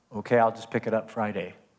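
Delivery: quietly spoken, soft and low. Recounting answering a cursing man on the phone, retelling a quiet answer. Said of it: "So I quietly said".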